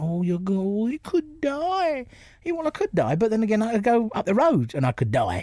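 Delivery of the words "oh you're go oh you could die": slow, high, over-delicate, overdone pitying voice. Mocking how people talked to him after his cancer: imitating people treating him with kid gloves. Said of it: "treating you with kid gloves".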